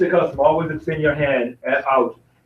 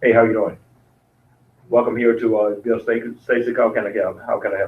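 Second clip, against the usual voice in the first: casual, unprofessional, salesy salesman voice; 4 semitones lower than usual. Showing how to greet a customer on the lot: non-professional sales approach. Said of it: "in a non-professional manner".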